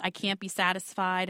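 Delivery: ordinary talk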